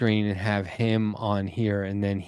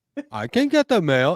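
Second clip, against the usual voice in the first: put-on childlike voice, higher and louder; 9 semitones higher, 6 dB louder than usual. Retelling answering a spouse about the mail: imitating own kid voice. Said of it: "using kid tone of voice".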